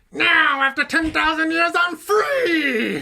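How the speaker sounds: very high villain queen voice, free drawn out. Hosts try out her voiceover to sign off, in Rita Repulsa voice. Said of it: "do her though. voice?".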